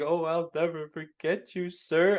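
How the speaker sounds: put-on weeping, very slow, drawn out, high, loud sobbing. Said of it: "crying and, like, saying".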